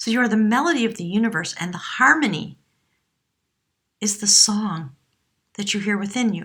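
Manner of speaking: choked up, voice cracking and breaking with emotion. Reading out a whale card message for Leo: choked up, voice cracking. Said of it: "there's a sort of a crack coming in my voice".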